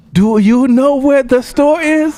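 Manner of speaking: put-on Chinese accent, pitched very high. Imitating a woman who speaks English in the accent of those around her: imitated Chinese accent. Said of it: "So if it was like Chinese".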